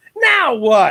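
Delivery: "now what" said slow, high and drawn-out. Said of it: "John would say it like that".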